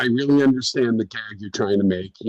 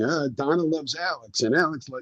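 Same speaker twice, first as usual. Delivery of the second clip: snarky, sarcastic announcer read; 4 semitones higher, 4 dB quieter than usual. Retelling how the promo's announcer sounded: imitating a sarcastic announcer. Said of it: "the sarcastic announcer going".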